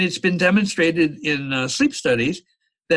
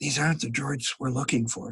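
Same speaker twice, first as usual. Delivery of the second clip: muttered under the breath, quieter; 3 semitones lower, 8 dB quieter than usual. Retelling a movie checkpoint scene, Obi-Wan Kenobi under his breath. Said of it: "Obi-Wan says under his breath".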